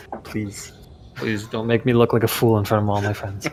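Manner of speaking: whispered under breath. Retelling the small blessing they said before taking it, whispered under breath. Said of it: "whispering a little blessing, uh, like a small blessing under my breath".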